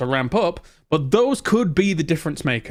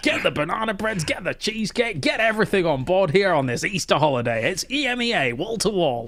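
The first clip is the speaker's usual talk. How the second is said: assumed, put-on voice, higher; 4 semitones higher than usual. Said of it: "I don't know why I'm doing that voice".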